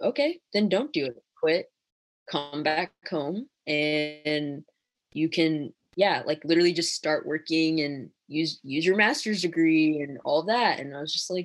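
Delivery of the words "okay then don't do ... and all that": usual speaking voice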